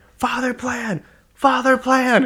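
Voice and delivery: very high, slow, drawn-out pleading. Retelling a coach's pleas to a fighter: imitating a coach begging. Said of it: "Javier, like, begging him".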